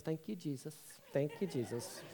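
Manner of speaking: very quiet, barely audible murmur under breath. Retelling what she muttered after his confession: imitating someone muttering under breath. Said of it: "I hear her mutter under her breath".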